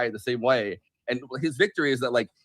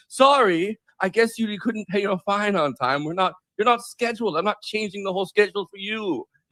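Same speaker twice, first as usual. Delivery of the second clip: gloating, dismissive put-on British accent, pitched up; 7 semitones higher than usual. Retelling what the official running the association said: imitating a British accent. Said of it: "he has, like, a British accent".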